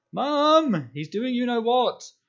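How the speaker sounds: shrill, very high, very loud, long wailing howl. Dudley dashes back towards the house, calling his mum about Harry, howling. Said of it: "howled Dudley".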